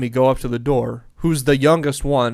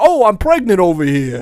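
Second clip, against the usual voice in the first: put-on high, thick, full-on Brooklyn accent; 5 semitones higher, 6 dB louder than usual. Recalling a funny scene, quoting a woman's line: strong Brooklyn accent. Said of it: "probably peak Brooklyn accent for her".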